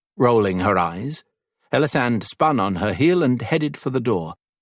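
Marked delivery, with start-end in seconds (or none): none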